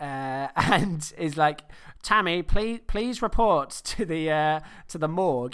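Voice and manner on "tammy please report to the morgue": put-on over-the-top Irish accent, much slower. Recounting a movie scene where the leprechaun speaks over the mic, most irish accent possible. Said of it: "in the most Irish accent possible".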